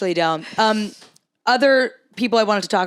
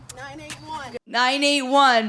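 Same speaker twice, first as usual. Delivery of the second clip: put-on shaky voice, higher; 5 semitones higher than usual. Imitating someone calling a pickleball score while running: shaky voice. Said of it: "so I'm trying to get that shake in there".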